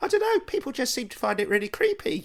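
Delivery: put-on innocent little ghost girl voice, high, wide pitch range.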